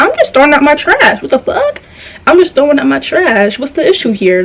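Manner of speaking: high, sing-song, put-on innocent tone. Speaker retells pretending not to hear a man yelling: acting out feigned innocence. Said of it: "I'm pretending like".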